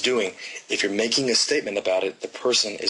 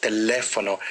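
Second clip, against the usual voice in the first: te-LE-fono, stress on the second syllable le. Showing how to say the Spanish word teléfono, stress on second syllable le. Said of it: "Y la segunda sílaba, le, tiene la énfasis".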